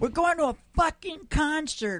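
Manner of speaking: put-on rude drunk woman voice, yelled very high.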